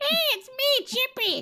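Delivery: very high, very slow, modulated voice. Reminding a friend how they kept laughing at their own modulated voice, in a high-pitched Chippy voice. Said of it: "you had this like high voice".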